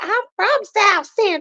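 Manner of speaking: mocking tone, high and loud.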